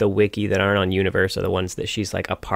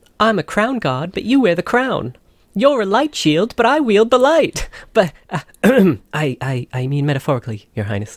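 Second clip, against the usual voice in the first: put-on British accent, higher and louder; 11 semitones higher, 5 dB louder than usual. Taking a turn at Lux impressions: Lux impression with British accent. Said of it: "You gave her a little bit of a British accent".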